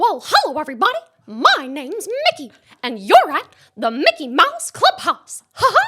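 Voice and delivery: pitch way up, belting. Doing a requested character impression, in a Mickey Mouse voice. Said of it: "I've got Mickey Mouse under my belt".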